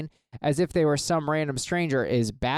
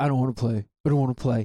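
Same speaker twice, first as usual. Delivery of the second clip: imitated child's voice; 3 semitones lower than usual. Acting out a kid playing a Nintendo Switch who is asked to play: imitating a kid refusing to play. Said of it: "He's just there playing his Nintendo Switch".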